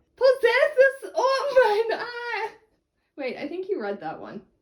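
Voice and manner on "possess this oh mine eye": put-on very high, very slow shouting in Scottish accent. In a scene, a character bursts in shouting sonnets, shouting in a Scottish accent. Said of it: "shouts sonnets at me in Scottish".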